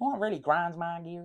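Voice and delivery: bad Southern American accent. Quoting a Family Guy catchphrase: terrible Southern American accent. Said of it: "That was a terrible accent".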